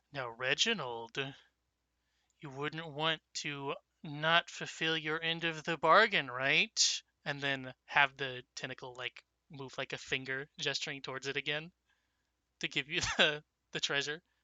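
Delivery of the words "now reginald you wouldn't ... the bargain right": knowing, cynical, sardonic, sarcastic tone. A player narrates a character's move, then speaks as him in a cynical voice. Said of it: "in a very um, cynical voice".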